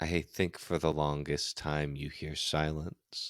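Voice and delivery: soft, low, hushed, tense voice.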